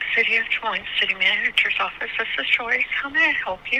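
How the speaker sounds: soft, quiet, polite receptionist-style voice. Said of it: "you spoke so quiet".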